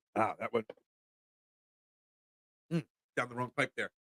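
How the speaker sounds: low, soft voice recovering from choking.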